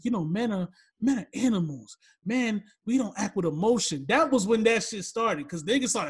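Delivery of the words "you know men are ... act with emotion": mild, gentle, mocking talk-show tone. Retelling what a guest said on a talk show: imitating a soft voice. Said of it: "He had the soft voice".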